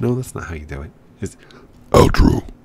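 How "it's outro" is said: very loud, deep, throaty hero voice pushed from throat. Showing another person how to say outro, Batman voice from the back of the throat. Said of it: "It's all in the back of the throat".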